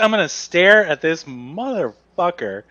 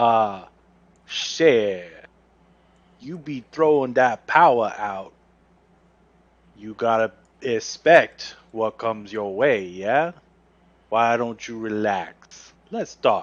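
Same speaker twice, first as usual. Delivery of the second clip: calm, very low, soft, easy-going voice; 7 semitones lower, 5 dB quieter than usual. A role-player, trying to convince someone, speaks in a calm but low voice. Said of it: "in a calm but low tone of voice".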